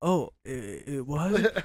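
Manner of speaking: play-acted sheepish, embarrassed surprise, very slow and drawn-out. Teasing another speaker by replaying their reaction: imitating someone embarrassed. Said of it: "I like how you were embarrassed".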